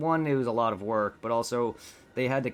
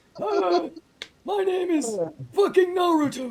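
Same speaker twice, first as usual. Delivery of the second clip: put-on weird smoker voice, higher, louder; 5 dB louder than usual. Imitating a parody dub's Naruto: weird smoker voice as Naruto. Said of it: "Naruto's got the weird smoker voice".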